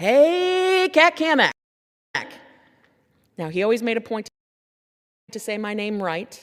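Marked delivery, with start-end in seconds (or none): 0.0-1.5 very loud, very high, booming hollered voice. Recalling how Doug greeted you every time he saw you, in Doug's booming greeting. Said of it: "it was going to be a booming voice".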